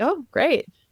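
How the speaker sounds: put-on dull unenthused voice. Retelling how others reacted to her news: imitating a dull reply. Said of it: "And they were just dull".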